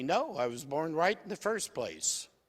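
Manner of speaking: ordinary delivery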